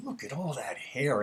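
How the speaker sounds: venomous, spiteful, venom-laced tone. Retelling what an aunt said on seeing long hair: imitating a venomous remark. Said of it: "she'd say it with this venomous kind of display".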